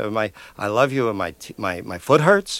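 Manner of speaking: ordinary talk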